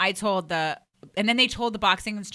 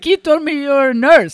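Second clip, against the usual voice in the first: very loud, high, put-on West African accent; 8 semitones higher, 12 dB louder than usual. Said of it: "West African, I'm not doing that impression right".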